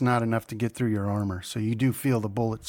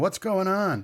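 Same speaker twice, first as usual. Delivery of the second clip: mimicked scream, much higher pitch; 9 semitones higher than usual. Describing a scene, voicing a guy peeking around the corner, retelling a scream. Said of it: "and he's screaming".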